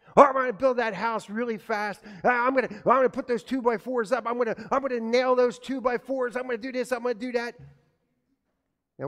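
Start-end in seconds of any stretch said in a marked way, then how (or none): 0.1-7.5 rushed cartoon-rabbit chatter, high and loud. Voicing a rabbit who does everything quickly: hurried rabbit voice. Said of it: "what do you think Rhonda the rabbit decided?".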